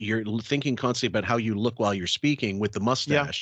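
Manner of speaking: ordinary talk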